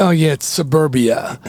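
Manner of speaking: ordinary talk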